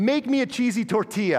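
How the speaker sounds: very high-pitched, words coming through laughter. Reading out examples of a seven-year-old king's demands, laughing while speaking. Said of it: "I can't even say it without laughing".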